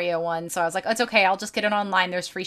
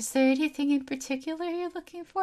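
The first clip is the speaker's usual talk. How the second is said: play-acted frightened, downcast, sad voice, high-pitched; 8 semitones higher, 3 dB quieter than usual. Retelling what a scared young store employee asked: imitating a sad, scared employee. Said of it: "he's just so sad and scared".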